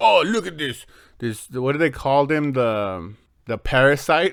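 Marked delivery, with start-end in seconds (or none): 0.0-0.8 put-on god voice, pitched high. Retelling a god character's line from the episode: imitating a deep god voice. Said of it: "he has this deep voice".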